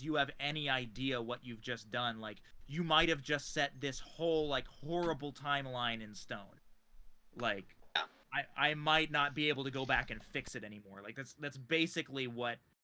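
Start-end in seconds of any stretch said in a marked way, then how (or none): none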